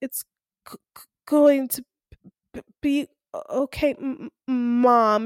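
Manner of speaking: slow, halting stutter on each first sound. Retelling a scene where a character reverts to his younger self: imitating a stutter. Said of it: "he starts to stutter".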